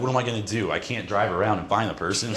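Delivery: normal talking voice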